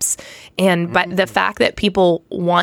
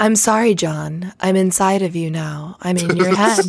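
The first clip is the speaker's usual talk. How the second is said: creepy put-on cartoon cat voice. Joking about a lasagna-flavored drink as Garfield: terrifying Garfield voice. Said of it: "the voice is too good".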